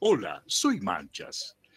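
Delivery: loud big-cat character voice. Asked how the jaguar talks, the speaker demonstrates in the jaguar voice. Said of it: "yo quiero escuchar cómo habla el jaguar".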